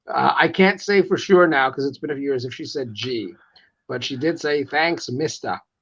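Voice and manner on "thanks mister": imitated New York accent. Retelling a woman thanking him during a trip, in a New York accent. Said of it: "just hearing that with a New York accent".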